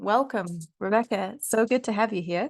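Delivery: jokey, put-on podcast host voice. Welcoming a guest at the start, joking: put-on podcasting voice. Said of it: "This is my podcasting voice".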